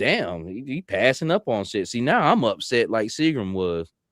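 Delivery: ordinary talk, nothing marked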